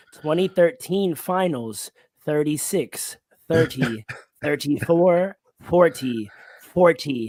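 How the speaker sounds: very slow, measured, deliberate delivery. Repeating numbers so people in the back hear: very slow, deliberate. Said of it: "I want to say it real slow to make sure they hear me in the back".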